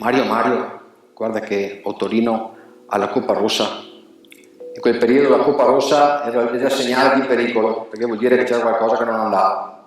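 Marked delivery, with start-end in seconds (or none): 0.0-3.8 hushed, half-whispered, under the breath. Retelling how a colleague half-whispered to mario in the shed, imitating someone half-whispering. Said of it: "mi fa a sottovoce".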